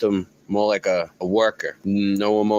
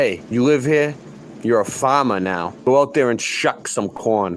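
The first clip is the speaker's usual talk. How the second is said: put-on bossy, commanding voice; 3 semitones higher than usual. Voicing someone taking in a sent orphan: voicing an orphan's new master. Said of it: "Was more like".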